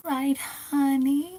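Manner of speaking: sweet, very high voice, honey drawn out. Dressed up as Tiffany and carrying a doll, the speaker tries a sweet Tiffany voice. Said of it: "talk like this so I can sound really sweet".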